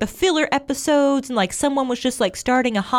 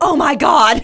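loud, thrilled, geeked-out starstruck mock outburst; 3 semitones higher, 6 dB louder than usual. Retelling someone jumping out of their seat: imitating an excited exclamation. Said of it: "she was geeked out".

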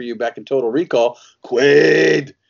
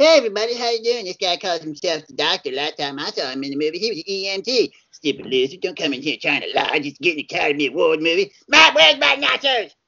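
put-on cartoon kid voice; 4 semitones higher than usual. Promoting his film, a performer introduces a friend he brought: Cartman voice. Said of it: "Always good to have Cartman around".

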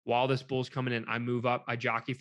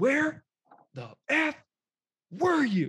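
imitated, very high, held-back whisper-yell; 14 semitones higher, 5 dB louder than usual. Retelling a hunting partner's angry question: imitating someone whisper yelling. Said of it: "essentially yelling, but not yelling".

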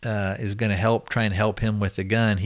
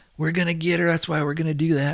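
yelled out hard, high and raised; 7 semitones higher than usual. Recounting a scene where one guy yells back at the brother, retelling a yell. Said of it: "the one guy yells".

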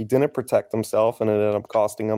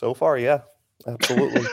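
sorrowful, sad-sounding voice; 3 semitones higher than usual. Answering a question about whether the Eagles miss someone, sounding sad. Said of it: "He sounds sad".

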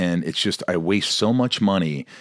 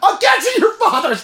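put-on very high, loud, tearful delivery; 7 dB louder than usual. Retelling the other speaker's line from a film scene: imitating an emotional delivery. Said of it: "you were emotional".

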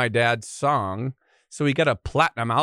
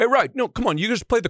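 put-on old-school Italian dad voice, higher; 11 semitones higher than usual. Retelling how an old-school italian dad taught guitar: imitating old-school italian dad. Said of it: "He's like".

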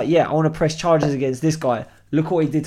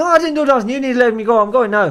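loud, high, thick, proper put-on Irish accent; 8 semitones higher, 5 dB louder than usual. Retelling stopping a man who insists he did nothing, in a proper thick Irish accent. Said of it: "in a proper thick Irish".

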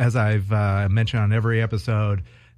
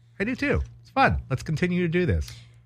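high, swooping burst, voice jumping up octaves; 8 semitones higher, 4 dB quieter than usual. Agreeing that the show is fun too: voice rising in pitch. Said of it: "Why did your voice rise a couple of octaves?".

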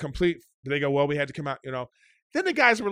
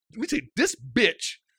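mock furious, fuming, heated, worked-up outburst; 3 semitones higher than usual. Retelling what was said to the anger management guy: mock-furious retelling. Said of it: "I'm furious at this point".

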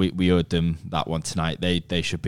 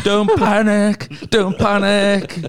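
very high, loud, drawn-out, slow panicked cry; 8 dB louder than usual. Comparing a footballer to Jonesy off Dad's Army: Jonesy from Dad's Army voice. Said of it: "is it Jonesy off Dad's Army".

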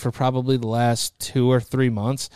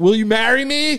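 put-on high-pitched yell, muffled; 9 semitones higher, 4 dB louder than usual. Describing a show where people propose through a wall, imitating someone screaming. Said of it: "screaming it through the wall".

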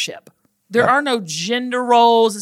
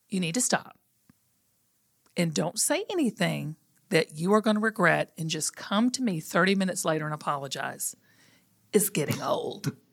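put-on calm voice, lower and quieter; 4 semitones lower, 8 dB quieter than usual. Retelling what the partner said in an argument: imitating a real calm voice. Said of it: "said in a real calm voice".

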